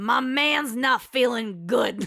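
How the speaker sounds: put-on old-money East Coast accent. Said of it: "You have to give it the accent".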